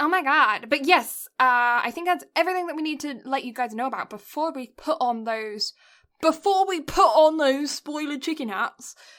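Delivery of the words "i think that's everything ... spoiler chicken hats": exaggerated British accent, higher pitch. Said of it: "I just had to get incredibly British there".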